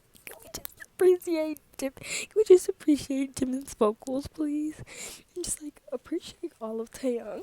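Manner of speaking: gushing, crying with tears of joy. Sitting on the bed at midnight, excited over some boys, crying tears of joy. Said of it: "I'm crying tears of joy".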